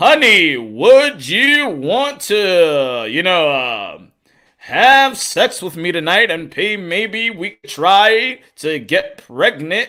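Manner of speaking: very slow announcer cadence, "to" drawn out. Imagining the interviewer talking to his partner: announcer voice imitating Ray Flores. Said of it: "Imagine he's like that with his significant other".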